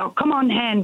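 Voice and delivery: put-on big, thick, strong Glaswegian accent. Imitating a friend from glasgow, in a strong glaswegian accent. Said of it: "she's got this big strong Glaswegian accent".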